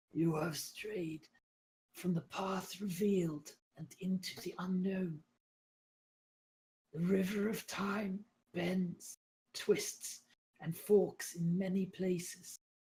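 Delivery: very weak, faint, high, slow voice. A game narrator voices a guide speaking into the players' dream, very weak. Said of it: "you hear her very weak voice".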